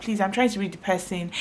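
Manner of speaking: ordinary talk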